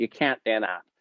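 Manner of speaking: nasal, whiny, annoying put-on voice. Speaker mocks instructors who always told them no, in a nasal annoying instructor voice. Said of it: "annoying instructor voice".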